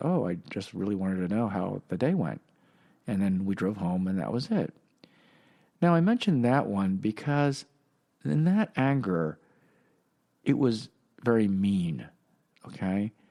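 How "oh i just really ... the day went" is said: mock quiet, subdued voice. Recounting yelling at their father, the speaker imitates his quiet reply. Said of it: "my father kind of just quieted".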